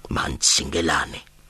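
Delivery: low, mocking mutter from mouth's corner. A man passes a security guard at the exit, mocking in a low voice. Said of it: "Tsano mocked him in a low voice from the corner of his mouth".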